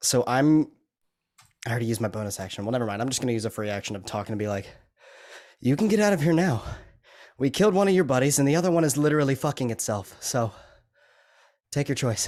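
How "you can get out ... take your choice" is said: menacing, intimidating, threatening tone. A tabletop player's character tells an enemy to leave, intimidating threat. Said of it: "I want to just try and intimidate him".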